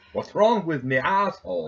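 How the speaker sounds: high put-on Irish accent, done comically. A speaker reads out a Facebook fail post, in an Irish accent. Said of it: "in an Irish accent".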